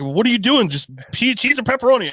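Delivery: put-on yelling. Retelling impatient people in a pizza line: imitating people yelling. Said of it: "the people behind me are yelling at me".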